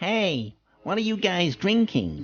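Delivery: high, proper whiny American cartoon bloke voice. Retelling how an American man came over to them, imitating Buzz's whiny voice. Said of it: "with a proper whiny voice".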